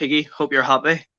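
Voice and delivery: hurt, aching, pained, wounded tone. Telling a rival fan about a three-one defeat, pained, hurt tone. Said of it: "I'm sure you can hear the pain".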